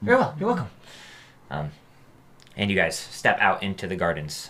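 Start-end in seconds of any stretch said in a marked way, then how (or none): 0.0-0.7 very high-pitched character voice. Voicing Maximus answering a player's thanks: Maximus voice. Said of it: "he kinda nods".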